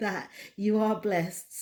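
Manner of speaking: words breaking up with laughter. Reminding viewers to rewatch this video, laughing while talking. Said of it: "I'm laughing".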